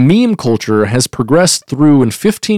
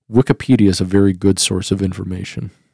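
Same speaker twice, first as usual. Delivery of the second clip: bone-dry, low, flat deadpan delivery; 6 semitones lower, 5 dB quieter than usual. Showing how a joke could land if told deadpan enough: deadpan. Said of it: "if you give it deadpan enough".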